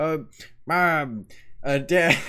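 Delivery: put-on attempted Texan accent, teenage boy. Voice acting a Texan teenage boy addressing his parents, speaker tries an attempted Texan accent. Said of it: "How am I supposed to do a Texan accent?".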